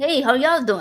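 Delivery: put-on very thick Texan accent. Retelling the greeting a man on the porch always gave, in a very Texan accent. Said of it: "Like very, very Texan accent".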